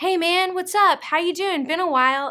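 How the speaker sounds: mock easygoing, laid-back tone. Acting out how he might greet people back home: acting calm and casual. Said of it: "he's all calm and casual".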